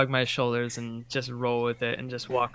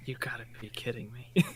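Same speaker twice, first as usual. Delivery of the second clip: breathy, hushed whisper; 6 dB quieter than usual. Whispering in character after a fall: whispering in character.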